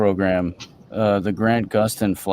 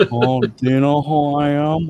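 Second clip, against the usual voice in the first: mock youthful voice, higher; 6 semitones higher, 3 dB louder than usual. Imitating a voice that sounded a lot like Anakin: Anakin voice. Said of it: "he sounded a lot like, like Anakin".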